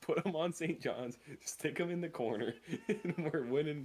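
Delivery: high, slow talking through giggles.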